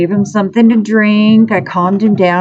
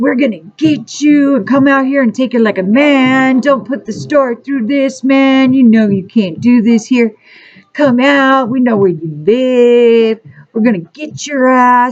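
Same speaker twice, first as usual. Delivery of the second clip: mock screaming in a put-on male voice; 3 semitones higher than usual. Recounting huge men in a store screaming at a guy, imitating men screaming. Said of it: "they're screaming at the guy".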